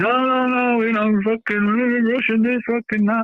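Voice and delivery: high, frantic, squealing mock panic.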